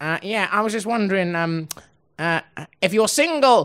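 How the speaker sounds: put-on posh whiny boy voice. Retelling a teenage boy's question to them, in a posh, whiny imitation. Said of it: "he sounded really posh and like really like whiny".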